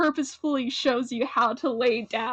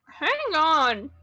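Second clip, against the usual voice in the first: words pushed through clenched, gritted teeth; 4 semitones higher than usual. Voicing a character who has just been scruffed, speak through gritted teeth. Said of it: "he says through like gritted teeth".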